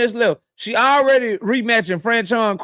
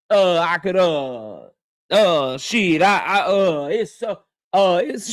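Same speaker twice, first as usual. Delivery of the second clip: mock stuttering, put-on stammering, lower pitch; 5 semitones lower than usual. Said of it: "she can't even think of nobody to fight".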